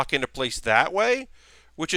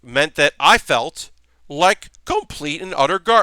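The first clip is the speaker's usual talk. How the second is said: voice breaking mid-word on gar-; 5 dB louder than usual. Describing feeling unwell from allergies to the chat: voice cracking. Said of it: "my voice cracked there".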